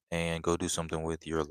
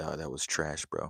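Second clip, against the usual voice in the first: ordinary delivery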